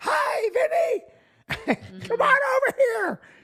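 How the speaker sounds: very high-pitched, very slow voice. Retelling an empty Disney World visit, Mickey greets Vinny: terrible Mickey Mouse impression. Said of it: "I do a terrible Mickey Mouse".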